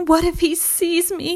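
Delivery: high, frightened little whimper. A small hen, afraid of a bigger bird that pecks, whimpering. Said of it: "she whimpered".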